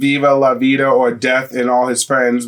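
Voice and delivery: normal talking voice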